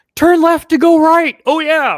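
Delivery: very loud, high-pitched cartoon-style shout. Retelling what was heard while spinning out in a game: Lightning McQueen voice. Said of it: "I hear Lightning McQueen going".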